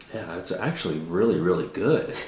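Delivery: genuinely surprised, caught off guard tone. Tasting bourbons and giving a verdict on this one, sounding surprised. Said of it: "You sound so surprised".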